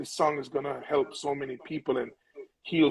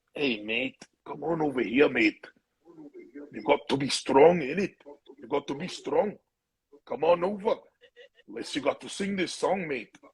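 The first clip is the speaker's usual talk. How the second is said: comic, exaggerated Scottish brogue; 2 semitones higher than usual. Retelling what Johnny Reed said at a funeral morning: imitating a Scottish accent. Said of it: "his Scottish accent is very funny".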